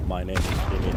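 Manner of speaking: flat monotone voice. Showing how Kimi always talks: monotone Kimi impression. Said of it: "He talks like this all the time".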